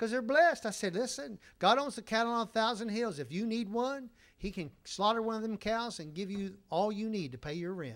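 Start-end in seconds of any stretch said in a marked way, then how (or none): none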